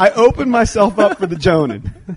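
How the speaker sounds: high, fast, loud talk while laughing.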